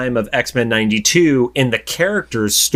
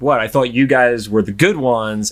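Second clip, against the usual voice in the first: put-on sarcastic tone. Recapping a show, the speaker acts out a character's reply, mock-sarcastic. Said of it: "Ross gives the sarcastic".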